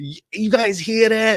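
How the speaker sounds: very high-pitched, slow, put-on New York accent. Quoting a robot character hearing a noise: imitating a New York accent. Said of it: "why has he got a New York accent".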